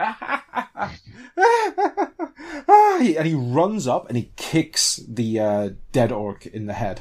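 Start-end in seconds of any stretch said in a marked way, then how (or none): 0.0-3.0 high-pitched, loud burst of laughter. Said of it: "he just bursts out with that laugh again".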